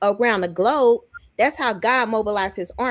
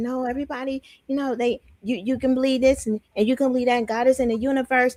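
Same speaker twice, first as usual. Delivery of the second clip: mock gentle, pretend soft-spoken tone; 2 semitones higher than usual. Showing how a gentle message would sound, mock gentle tone. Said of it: "be, like, gentle".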